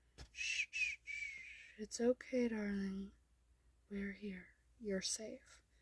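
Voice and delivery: gentle, comforting, soft, calm murmur. Reading a story where a character comforts someone: quiet and calm. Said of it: "And quietly, yet calmly, says".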